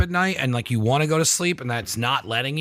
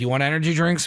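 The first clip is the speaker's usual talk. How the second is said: plain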